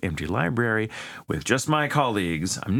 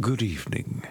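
put-on old-fashioned vampire voice. Reading out a listener's request, greeting in a Victorian-era vampire voice. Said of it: "very nice good evening that's what i would have done".

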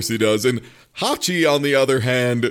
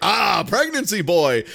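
play-acted loud, proud, high-pitched shout; 6 semitones higher than usual. Retelling a scene where Ravi recognizes someone: imitating a loud, proud yell. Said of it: "he yells loudly and proudly".

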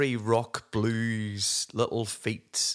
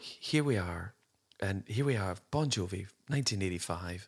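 mock-deadpan, flat, quiet voice; 3 semitones lower, 6 dB quieter than usual. Mimicking a woman from a 1985 Bon Jovi special: imitating a quiet deadpan delivery. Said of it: "she had such a deadpan delivery".

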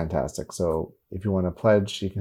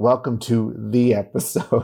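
put-on authoritative, commanding announcer tone, much slower; 3 semitones higher, 5 dB louder than usual. Teasing the co-host about how they opened the episode, mock authoritative tone. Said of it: "It sounded so like it sounded so authoritative".

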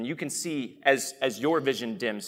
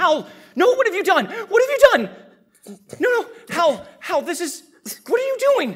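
full-throated shrieking, very high and loud; 9 dB louder than usual. Narrating a scene as a character opens her eyes, then screaming. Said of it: "just starts screaming".

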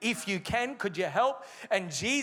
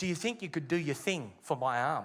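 put-on whisper, lower pitch; 6 semitones lower than usual. Retelling a personal trainer's question at the gym: imitating a whisper. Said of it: "looks around and whispers and says".

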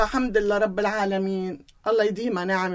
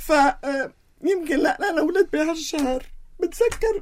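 crying, tearful, much higher pitch; 7 semitones higher than usual. The speaker, remembering family and childhood, explains why she is crying: crying. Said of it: "تعرفي ليه ببكي؟".

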